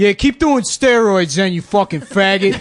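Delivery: loud, high-pitched jeering shout. Retelling a dad harassing a player in the bullpen, imitating a Staten Island dad heckling. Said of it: "and he's like".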